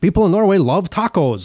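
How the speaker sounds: worst-ever fake Norwegian accent, high-pitched. Quoting a YouTuber from a Norwegian cultural channel: bad Norwegian accent. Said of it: "That's the worst Norwegian accent ever".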